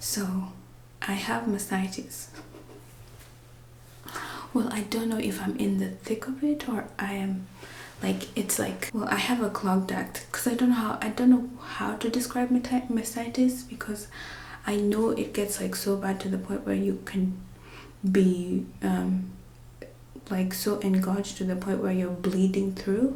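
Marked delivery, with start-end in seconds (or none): 0.0-7.5 soft unvoiced whisper. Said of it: "I'm whispering because Miss Rue is taking a nap".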